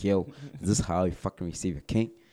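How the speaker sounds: put-on angry, furious voice. Retelling what an angry hand says on arrival: imitating an angry character. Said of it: "he's fucking pissed".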